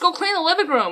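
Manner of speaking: angry, fed-up voice. A mom retells what she finally told her kids, retelling getting mad. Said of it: "why you gotta get so mad?".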